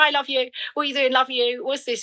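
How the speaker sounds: light, jokey, offhand tone. A speaker quotes how he ends their phone calls, imitating a jokey 'love you'. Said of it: "like in a little bit of a jokey way".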